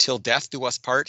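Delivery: normal talking voice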